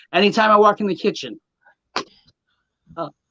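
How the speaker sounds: voice catching, choked-up, emotional, getting upset. Talking about family and the kitchen, getting a little upset. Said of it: "I'm getting a little upset".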